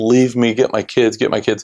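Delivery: mock mumbling, pleading tone. Retelling what the injured man mumbled while being dragged across the street, imitating someone mumbling. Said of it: "he's mumbling".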